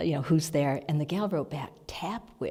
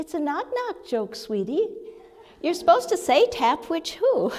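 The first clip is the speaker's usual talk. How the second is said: very high, sweet, lilting feminine voice; 13 semitones higher, 5 dB louder than usual. Retelling hearing a voice explain the knock knock joke: little sweet feminine voice. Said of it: "this little sweet feminine voice say".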